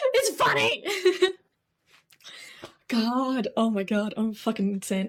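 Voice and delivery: slow speech, giggles breaking into every word. Still laughing at own joke while talking: laughing while talking. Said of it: "I'm still laughing at my terrible joke".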